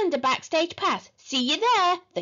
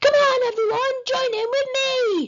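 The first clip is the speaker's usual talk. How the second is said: loud, very high rallying shout; 9 semitones higher, 4 dB louder than usual. A performer calls on the silent audience to join in, shouted. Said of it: "shouted Horrid Henry".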